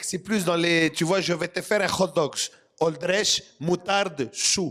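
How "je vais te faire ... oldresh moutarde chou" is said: French spoken with a put-on Greek accent. Comparing accents, the speaker demonstrates a greek accent. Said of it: "Alors que le grec".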